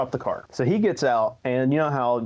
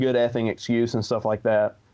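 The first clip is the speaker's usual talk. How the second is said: ordinary talk, nothing marked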